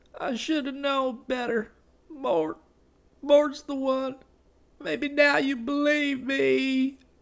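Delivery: faltering, weak, faint, barely audible, very high voice. A hurt woman speaks to the one beside her, weak and barely audible. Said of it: "Her voice was weak".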